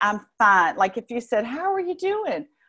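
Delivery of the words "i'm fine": slight put-on Southern American accent, raised pitch. Saying she's fine, putting a little Southern accent on it. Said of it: "I'm going to put my little Southern accent on it".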